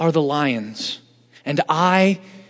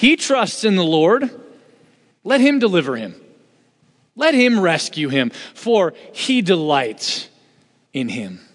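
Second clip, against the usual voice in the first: acted sneering, sarcastic jeer, swooping sing-song. Quoting enemies who taunt David: imitating a sarcastic taunt. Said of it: "They say sarcastically".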